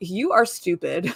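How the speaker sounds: harsh, cutting, berating scolding tone. Retelling how he reamed into her: imitating someone scolding. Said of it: "he kind of reamed into her".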